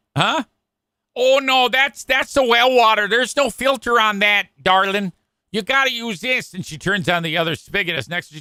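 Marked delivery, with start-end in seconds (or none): 1.1-6.5 sweet, put-on Michigan accent, pitched up. Retelling what an office worker at the radio station said: imitating a sweet Michigan accent. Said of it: "She's got a sweet Michigan accent".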